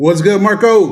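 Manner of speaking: very loud, high-pitched shouted words. Greeting someone on the show, yelling. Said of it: "why are you yelling?".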